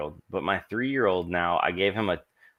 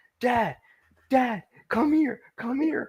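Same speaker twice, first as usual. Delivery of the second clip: put-on very high small child voice, calling out. Retelling his son calling him over: imitating his young son calling. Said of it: "and he's like".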